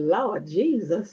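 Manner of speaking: low, slow, drawn-out shocked exclamation. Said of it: "I was shocked".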